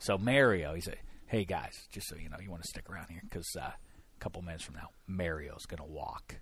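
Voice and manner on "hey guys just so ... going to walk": put-on secretive whisper, lower and quieter. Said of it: "whispers as though this is a secret".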